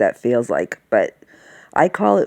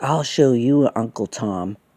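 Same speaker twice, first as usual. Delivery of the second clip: really mean, nasty, slow, taunting tone; 2 semitones lower than usual. Retelling a weird comment a man made: imitating a mean tone. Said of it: "he just said it really mean".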